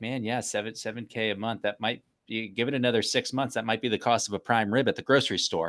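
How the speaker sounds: ordinary delivery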